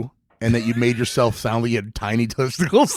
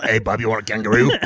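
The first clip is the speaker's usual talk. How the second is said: gruff put-on Australian accent. Showing how the impression works: gruff Hugh Jackman voice. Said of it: "You just say Bub in a gruff voice".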